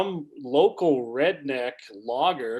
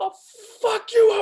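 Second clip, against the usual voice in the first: mock very high, shrill, loud, out-of-control raging scream; 5 dB louder than usual. Reminding the other speaker of a parking-lot outburst; retelling insane screaming. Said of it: "screaming like an insane person".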